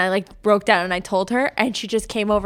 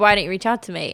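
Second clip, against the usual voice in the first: plain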